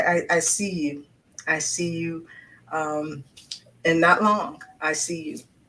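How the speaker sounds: slow, teary, choked-up voice. Speaking to a young lady with her books, choked up and teary-eyed. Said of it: "I'm getting choked up and teary eyed right now".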